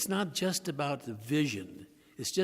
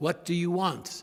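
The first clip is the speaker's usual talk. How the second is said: loud, raised voice; 4 semitones higher, 5 dB louder than usual. Leading an exercise where listeners pretend to be blind, loud voice. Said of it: "in a loud voice".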